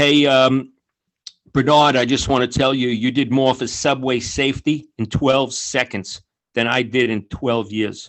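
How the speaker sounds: plain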